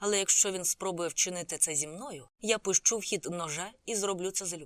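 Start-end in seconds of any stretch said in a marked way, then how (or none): none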